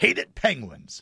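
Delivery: hyped-up TV announcer broadcast promo voice. Previewing tomorrow night's game in an NBC Sports rivalry-night style: mock NBC Sports rivalry promo voice. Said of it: "That was really weird the way you said that".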